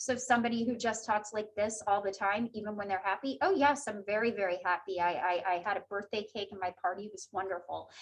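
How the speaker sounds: very low, flat voice with no inflection. Demonstrating a voice with no tone even when happy, flat monotone. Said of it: "a voice with no tone or no inflection".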